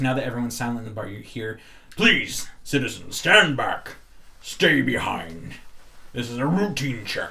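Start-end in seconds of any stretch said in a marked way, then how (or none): 2.0-7.3 loud, booming, resounding official voice. Game master voicing an unseen speaker to the silent bar, booming voice. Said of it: "you hear that same booming voice".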